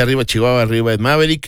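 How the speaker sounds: plain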